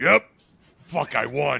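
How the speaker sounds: slow, drawn-out, rough, creaky voice. A man acts out his wife reacting to winning, imitating his wife. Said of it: "every time you've mimicked your wife".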